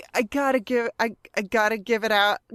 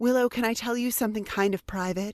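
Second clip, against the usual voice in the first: put-on sweet and sensitive voice, quieter; 5 dB quieter than usual. Retelling a scene, quoting a guy who sounds sweet: imitating Parker's sweet sensitive voice. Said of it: "this guy who sounds all sweet and sensitive".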